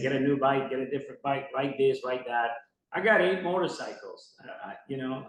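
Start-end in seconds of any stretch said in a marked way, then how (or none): none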